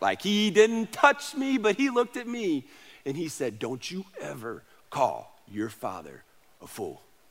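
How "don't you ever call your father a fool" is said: very low, very soft, deep hushed baritone. Retelling what a man said, kneeling down in his face, imitating a deep baritone. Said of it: "in that deep baritone voice".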